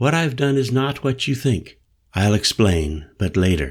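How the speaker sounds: plain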